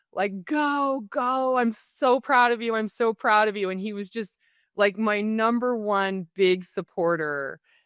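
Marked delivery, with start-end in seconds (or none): 0.4-3.6 mock tearful, pitched-up, proud father shouting. Retelling his dad yelling at him in the driveway, imitating a tearful yell. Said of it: "in floods of tears and just yelling at me".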